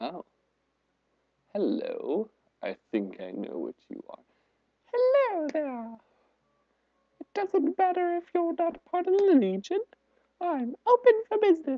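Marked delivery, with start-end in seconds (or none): 4.9-11.8 terrible, very high-pitched, put-on character voice. Voicing a female character the speaker meets, terrible put-on voice for her. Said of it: "I gave her that terrible voice".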